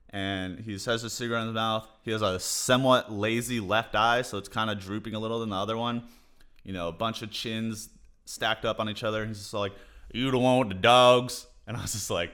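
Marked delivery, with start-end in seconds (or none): 10.1-11.4 put-on loud, broad-voiced small-town Texan man's accent. Retelling what a man said to the speaker, texas guy impression. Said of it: "It literally sounded just like the voice I did".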